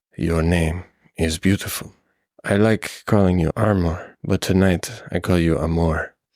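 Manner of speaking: hushed whisper. Telling a story to you, the man whispers in your ear: whispering. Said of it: "he whispers in your ear".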